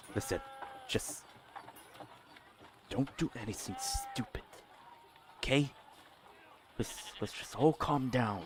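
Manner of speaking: very quiet whisper, barely above a breath. Voicing a mage who speaks to the players: whisper. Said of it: "in a whisper".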